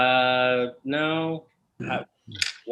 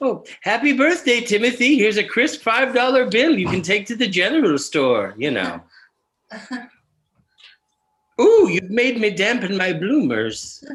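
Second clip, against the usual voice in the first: put-on old grandma voice, much higher, louder; 9 semitones higher, 7 dB louder than usual. Speaker describing a taste for grandma role play acts it out in grandma role-play voice. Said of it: "some grandma role play".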